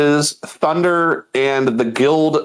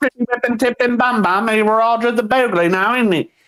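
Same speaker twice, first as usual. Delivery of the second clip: mock rapid British gibberish, higher pitch; 9 semitones higher than usual. Repeating the imitation of the game characters: imitating fast british gibberish. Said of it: "I can't speak gibberish as fast as you".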